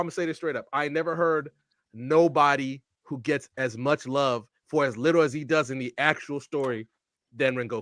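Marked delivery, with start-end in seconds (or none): none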